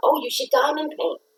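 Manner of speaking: high, called-out yell. Recounting calling out to a stressed woman, retelling a yell. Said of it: "So I yelled out".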